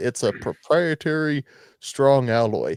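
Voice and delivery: put-on sarcastic tone. Retelling what the seller said about the steel case: imitating sarcastic tone. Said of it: "He said it as a joke, sarcastically".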